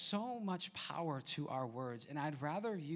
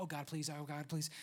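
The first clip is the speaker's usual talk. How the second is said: put-on muttered prayer-like murmur under breath. Recounting passengers praying on the plane: imitating praying under breath. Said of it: "praying under their breath".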